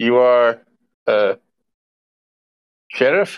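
badly broken, non-native English. Game master voices a nervous character stepping up to the sheriff, very broken english. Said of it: "In very broken English".

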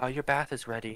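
gentle, soft, hushed, slightly high voice. Narrating a voice heard through the door to Tariq, soft voice. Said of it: "you just hear like a soft voice say like".

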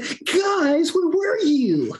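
put-on high, slow, stretched-out whine, no bass.

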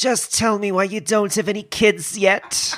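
very slow comic drawl, every word stretched out. Playing the internet's mother, a telephone, again on request: Joan Rivers impression. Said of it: "I was sort of doing a Joan Rivers".

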